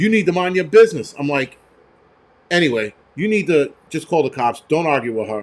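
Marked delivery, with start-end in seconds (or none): 0.0-1.1 put-on, imitated yelling. Speaker retelling an argument after a car crash, retelling a woman yelling. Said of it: "starts yelling at him".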